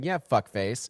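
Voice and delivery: barbed, passive-aggressive delivery. Mocking the other speaker's look: imitating a passive aggressive reply. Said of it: "you gave me the look passive aggressively saying".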